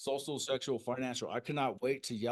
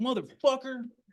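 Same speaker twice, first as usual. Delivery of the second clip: all-out yelling, very loud, high and shrill; 13 semitones higher, 8 dB louder than usual. Retelling answering the roommate: imitating himself yelling. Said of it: "And I start yelling at him".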